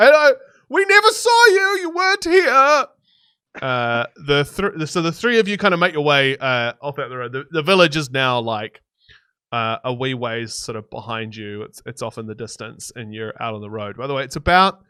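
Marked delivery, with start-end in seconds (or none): 0.0-2.9 very high-pitched, loud yell. Voicing a character who yells after departing travelers: character yelling after the party. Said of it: "you kinda hear him yell after you".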